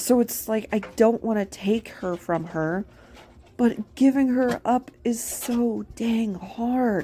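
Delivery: voice welling up with tears, close to crying. Speaker talking to her viewers, tearing up. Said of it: "I'm tearing up just thinking about it".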